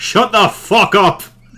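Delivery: very high, furious, angry shout. A player character answers a shouting specter, shouting back. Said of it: "I shout back".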